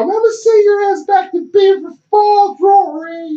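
put-on very high, creaky old grandpa voice. Retelling what a coach said when grabbing a face mask: imitating Coach Signetti. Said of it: "He's like an old grandpa".

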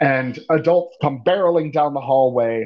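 ordinary delivery

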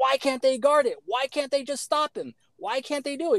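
high-pitched screaming. Describing fans watching a game on TV: imitating screaming at the TV. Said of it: "screaming at the T V".

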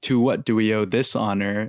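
put-on sarcastic tone. Retelling an old man's greeting to an unwelcome visitor: imitating Iroh's sarcasm. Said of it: "so sarcastically".

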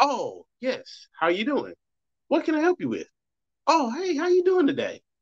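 very high, courteous, sing-song polite phone voice. Explaining code switching, the speaker answers the business line; polite business phone voice. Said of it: "then I answer my business line and be like".

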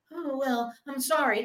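put-on soft, slow, dragged-out little-kid voice. Speaker mocking how a man on the show apologized, imitating a childish apology. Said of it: "He sat there like a fucking child".

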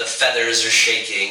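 ordinary delivery

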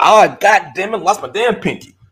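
very high-pitched, loud hollering yell. Contrasting a man's calm finger loss with how they'd react, mock hollering. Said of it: "we was hollering".

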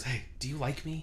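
soft, hushed half-whisper under the breath. Retelling what a girl in class asked mid-lecture, half-whispering. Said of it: "she whispers".

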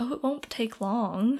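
ordinary talk

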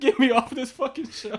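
tearful, bawling, high and loud crying wail. Retelling what a crying contestant seemed to say: imitating someone crying. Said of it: "He was crying".

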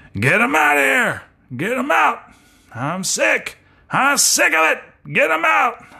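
very high, swooping, angry, furious yell. Imitating the coach pulling the quarterback: Mike Leach impression, angry yelling. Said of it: "That's my impression of Mike".

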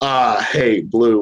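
put-on mild, pleasant southern American accent. Retelling a player's remark to the speaker's friend, in a southern accent. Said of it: "with his nice little southern accent".

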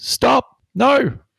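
very high, loud shrieking scream. Playing a game character trying to stop two others, screaming. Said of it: "So I'm gonna scream".

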